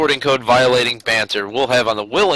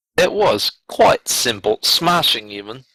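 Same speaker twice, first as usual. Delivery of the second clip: English accent, put on and laid on deliberately. After saying goodbye to guests, the speaker switches to an english accent. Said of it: "If you're going to talk in an English accent".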